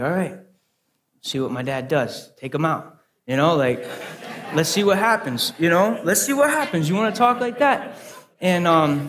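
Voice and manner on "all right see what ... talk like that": ordinary delivery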